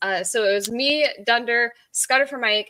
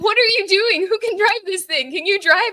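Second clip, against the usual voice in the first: yelling, high-pitched; 8 semitones higher than usual. Retelling a panicked game moment to friends: retelling a yell. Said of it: "yelling at them in group chat".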